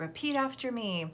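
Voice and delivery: ordinary talk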